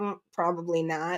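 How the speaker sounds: muttered under breath. Retelling a reply to a police officer while trick-or-treating: retelling a mutter under breath. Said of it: "under my breath".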